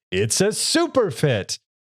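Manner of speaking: very slow, dragged-out, corny, lame disguise voice. Retelling a cartoon scene with Gohan in disguise: imitating Gohan's disguise voice. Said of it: "And in that voice".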